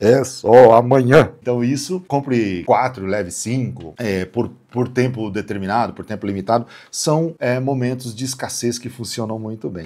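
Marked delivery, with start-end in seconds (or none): 0.0-1.3 very loud, booming TV ad announcer voice. Explaining scarcity in marketing, the speaker mimics a tv ad in a booming announcer voice. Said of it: "esse vozeirão do cara falando na T V".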